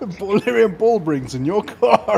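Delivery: laughing through the words. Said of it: "I'm laughing so much".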